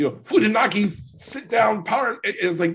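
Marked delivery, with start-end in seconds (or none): 0.2-2.2 high, loud, drawn-out announcer yell. Mocking an announcer who yells move names: imitating Excalibur yelling a move name. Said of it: "he yells like the Japanese version of a name".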